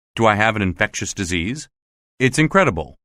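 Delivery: ordinary delivery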